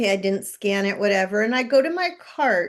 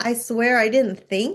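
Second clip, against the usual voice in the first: ordinary delivery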